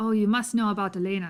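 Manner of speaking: Cockney accent attempt drifting into an Irish accent. A game character pressing a player about elena, accent drifting into irish. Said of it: "We're getting more Irish".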